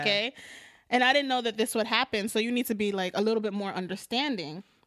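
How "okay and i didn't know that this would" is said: usual speaking voice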